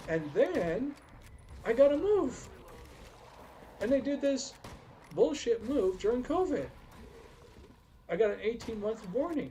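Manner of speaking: agitated, worked-up voice. Speaker recounting a run of hard events, getting worked up. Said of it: "you can tell I'm getting worked up".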